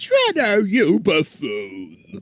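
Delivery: high, swooping eighties cartoon voice. Performing a preview line when asked: eighties Krang voice. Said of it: "a line of the eighties Krang".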